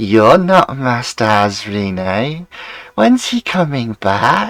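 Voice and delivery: really weird, warbling puppet-like voice. Voicing a puppet that suddenly speaks up, really weird warbling voice. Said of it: "really weird, warbling voice".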